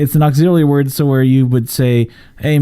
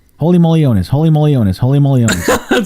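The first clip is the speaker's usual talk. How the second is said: fast, rattled-off repetition, three times. Trying to say a new made-up phrase fast three times, fast repetition. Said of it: "Try to say it fast 3 times".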